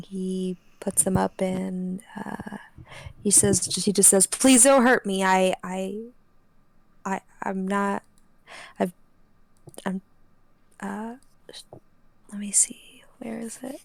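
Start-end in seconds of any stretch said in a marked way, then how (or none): 4.3-13.8 panicky, terrified babbling, stammering, words tripping over. Voicing a frightened man with his hands up: terrified babbling plea. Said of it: "he's just babbling".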